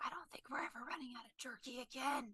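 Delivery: speaking in a whisper. Leaning over to a companion at the table: whispering. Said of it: "just whisper in his ear".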